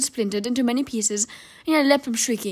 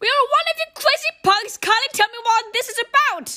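shrieked out, very high shout; 14 semitones higher, 3 dB louder than usual. Bruno yells back at the Grand Eye Witch during her countdown, shouting. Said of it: "shouted Bruno".

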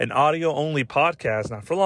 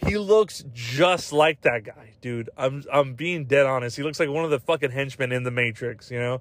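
plain

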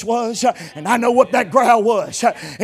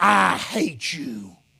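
put-on boy's growling voice; 6 semitones lower, 4 dB quieter than usual. Telling a story about a preacher, quoting what the boy said: retelling a boy's growl. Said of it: "that boy growled and said".

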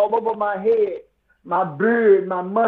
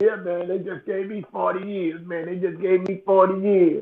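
plain

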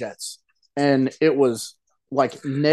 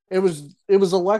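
ordinary talk, nothing marked

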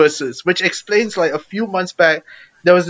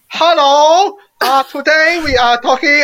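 put-on very high, slow Chinese accent; 10 semitones higher, 3 dB louder than usual. Retelling how a Texan woman spoke after waking up: imitating a Chinese accent. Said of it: "woke up with a Chinese accent".

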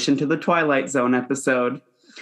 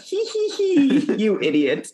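high, swooping, mocking snicker between giggles; 12 semitones higher than usual. Retelling how the flight attendant laughs at him: imitating a mocking giggle. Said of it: "hand over the mouth, pointing at him like".

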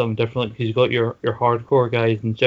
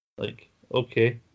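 normal talking voice

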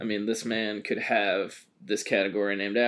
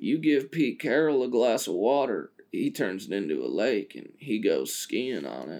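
put-on stoner voice. Podcast host quoting someone's line, in a fake stoner voice. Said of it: "a fake stoner voice".

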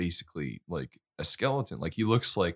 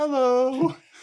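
mock friendly voice, higher and louder; 8 dB louder than usual. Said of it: "they're so friendly".

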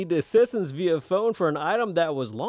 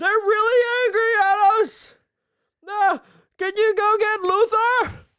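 very loud, very high all-out shouting; 5 dB louder than usual. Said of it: "I'm gonna need you to take it down a notch".

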